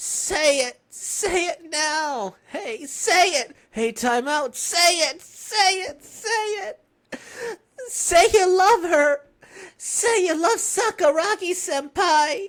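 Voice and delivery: loud, high shouting through tears. Character demands someone say they love Sakuragi senpai, crying while shouting. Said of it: "Why are you the one crying?".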